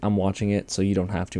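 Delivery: plain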